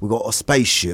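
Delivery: calm, soothing, gentle voice. Imitating a film character's line from Interstellar: imitating Michael Caine. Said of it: "he does the Michael Caine bullshit in Interstellar".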